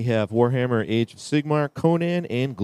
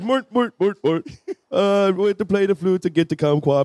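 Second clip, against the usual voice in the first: put-on mock Swedish accent, much higher, slower; 9 semitones higher than usual. Reading aloud from a text, in a Swedish Chef accent. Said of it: "in a Swedish ac- chef accent".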